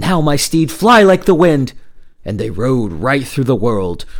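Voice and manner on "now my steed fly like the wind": high, loud rallying shout. Leaping onto his horse to reach his dying brother, he urges his steed, shouting. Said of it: "he shouted".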